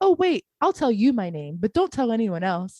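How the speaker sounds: chipper, happy, cheerful robot voice. Retelling what the NPC said: imitating a happy, chipper robotic voice. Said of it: "so happy and chipper robotic".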